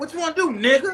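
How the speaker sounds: acted, very high-pitched, argumentative, taunting tone. Acting out someone arguing with somebody: imitating someone arguing. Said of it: "you could be arguing with somebody and say".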